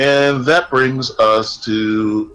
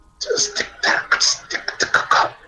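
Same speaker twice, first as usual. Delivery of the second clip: whispered voice. Narrating a creature's words to a player, whispering. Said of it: "It whispers".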